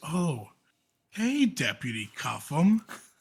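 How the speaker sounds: unsettling put-on creepy voice, slow and swooping. Deputy retelling how a man he pulls over greets him, creepy voice. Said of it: "he does the creepy voice".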